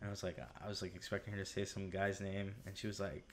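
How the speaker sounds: usual speaking voice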